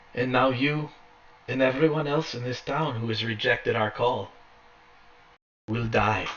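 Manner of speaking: put-on female voice. The narrator voices Lady Fiona Wachter addressing the crowd in the square: Lady Fiona Wachter, female voice. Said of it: "you hear this female voice speaking".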